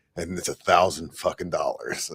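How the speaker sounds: quiet private mutter, aside to himself. Retelling what a guy in a crowded store said: imitating muttering under breath. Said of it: "go under his breath".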